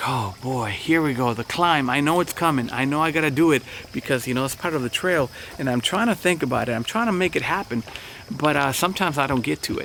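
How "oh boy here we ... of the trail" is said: ordinary talk, nothing marked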